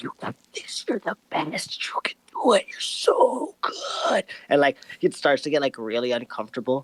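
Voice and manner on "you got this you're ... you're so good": close, breathy, coaxing whisper. Voicing a character who massages a friend's shoulders and leans in: whispering. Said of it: "leans in and, like, whispers".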